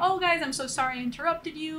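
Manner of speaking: ordinary talk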